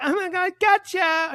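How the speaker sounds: very high, drawn-out, over-the-top flamboyant camp voice. Retelling the voices Lucas did for a flamboyant character: imitating Lucas's flamboyant character voice. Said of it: "he would do all these voices".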